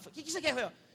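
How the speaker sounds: irritated, hostile, angry, confrontational tone. Retelling how the pilot opened up and answered: mock-angry. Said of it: "Ele abriu com raiva assim e falou".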